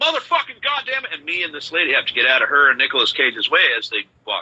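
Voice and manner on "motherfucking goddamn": very high, full-on, shrill scream. Retelling a mean lady who runs the truffle line, imitating someone screaming. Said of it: "she's screaming down the trail".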